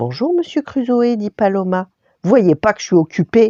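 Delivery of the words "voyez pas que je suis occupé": growling, scolding, big voice. Reading a children's story, a hermit scolds visiting children: growling in a big voice. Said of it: "gronde Robinson d'une grosse voix".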